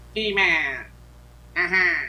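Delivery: high-pitched voice sounding as if without a nose. Speaker describes how the character with no nose sounds, doing a no-nose Skeletor voice. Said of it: "because he has no nose, so he sounds like".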